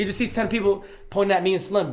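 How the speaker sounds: ordinary talk, nothing marked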